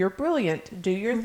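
normal talking voice

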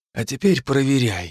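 insistent, pressing, forceful whisper. The narrator, holding Phil's hand, keeps pressing him; insistent whisper. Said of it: "продолжил я все тем же напористым шепотом".

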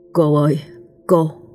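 feeble, faint voice, out of breath. Narrating, a man walks up and calls to a young woman sweeping the yard; feeble, out-of-breath voice. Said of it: "cất giọng thều thào như đang hết hơi".

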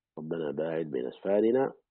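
ordinary talk, nothing marked

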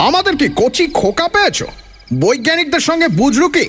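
shouting in a heavy voice. A character in a story suddenly shouts at the awed group, shouting in a heavy voice. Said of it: "তার ভারী গলায় চেঁচিয়ে উঠল".

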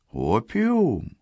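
feigned, puzzled, innocent surprise. Asked by a sailor about opium, the questioned man replies with feigned surprise. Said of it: "переспросил Спиридон таким тоном, будто слышал это слово впервые".

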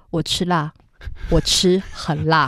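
calm, soft, slow deadpan.

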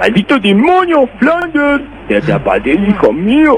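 high cartoon voice with big swooping pitch swings. Showing an entry from an impressions contest, a Homer Simpson impression. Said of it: "Pero Homero".

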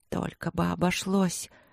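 whispering imploringly. A woman heading to her door after seeing frost round her window: pleading whisper. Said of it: "умоляюще прошептала я".

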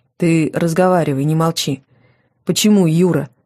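usual speaking voice

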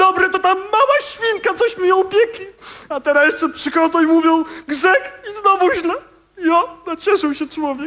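blubbering, sobbing speech through tears. Wasyl, urged by others to come along, crying. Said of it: "Nie becz, Wasyl, boś nie baba".

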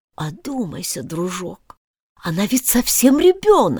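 meek, timid voice with rising pitch. The king speaks to the queen, his hand on her shoulder, timid. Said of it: "робко произнес".

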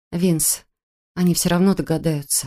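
ordinary delivery

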